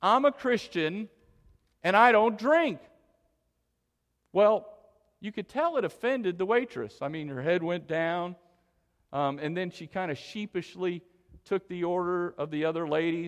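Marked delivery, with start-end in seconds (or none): 0.0-2.8 put-on loud, condescending tone. Retelling a Bible study leader's reply to a waitress, in a loud, condescending tone. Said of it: "she said in a loud, condescending tone".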